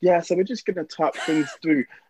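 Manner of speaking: calm, composed, collected, unruffled delivery. Describing a man on a show who shouts then calms down, imitating him being calm. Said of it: "he'll be all calm and be like".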